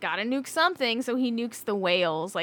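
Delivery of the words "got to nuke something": ordinary talk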